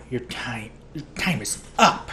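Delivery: threatening, menacing hissed voice. Narrating a story, the woman addressed as ma'am hisses at the narrator. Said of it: "she hissed".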